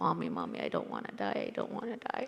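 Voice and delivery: put-on tearful crying, voice swooping. Retelling being hit by a car as a child: retelling own crying plea. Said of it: "I just remember crying, saying".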